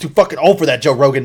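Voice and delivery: very loud, mad yell at full volume. Retelling what Joey Diaz said to Joe Rogan: Joey Diaz impression. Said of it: "mad and he starts, like, yelling".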